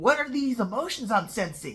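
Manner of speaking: normal talking voice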